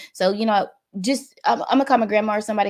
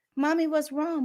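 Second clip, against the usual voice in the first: put-on baby-like child's voice, higher, quieter; 6 semitones higher, 4 dB quieter than usual. A mother retells a painful day, quoting her child: imitating her baby's voice. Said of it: "My baby says".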